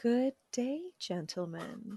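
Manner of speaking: soft, gentle, soothing, calming hushed voice. A sleep consultant guest greets the show's hosts in [name]'s soft calming voice. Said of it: "very is very soft and calming".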